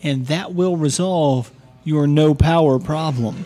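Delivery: polite, patronizing tone, as if over-explaining.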